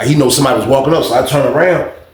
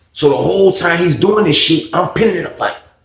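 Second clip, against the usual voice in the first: normal talking voice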